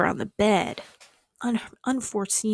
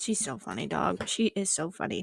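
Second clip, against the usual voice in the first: plain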